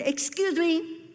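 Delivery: uncaring, no-pity tone. Retelling her reply to a crying woman, in a very unsympathetic voice. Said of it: "with a very unsympathetic voice".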